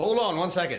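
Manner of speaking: high, loud, manic, riffing delivery.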